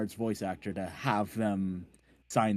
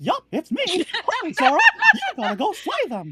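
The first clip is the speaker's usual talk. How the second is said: very high pitch, belted out loudly; 9 dB louder than usual. Retelling stepping up in front of her and doing a Mickey Mouse impression. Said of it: "I did my Mickey Mouse impression".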